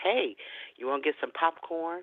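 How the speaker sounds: half-whispered, hushed, close-in stage whisper. Retelling what a stranger in a store said: imitating a half-whisper. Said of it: "he whispers to me".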